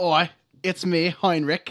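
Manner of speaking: put-on Australian accent in a servant voice. Introduced as the servant character, a player speaks as Heinrich in Australian accent. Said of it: "Going Australian today".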